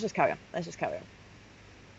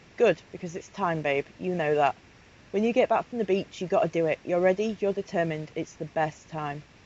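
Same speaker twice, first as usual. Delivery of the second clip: plain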